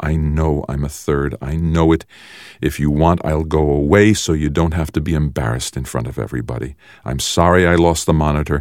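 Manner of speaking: ordinary delivery, nothing marked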